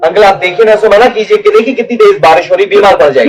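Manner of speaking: shouting. Asking an uncle to stop someone going out in heavy rain, shouting. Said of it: "खामखा चीख के अपना गला खराब कर रहे हो".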